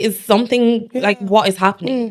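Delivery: flustered, panicking, confused bewilderment. Retelling getting many missed calls from siblings: retelling own panicked words. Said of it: "I'm, like, panicking".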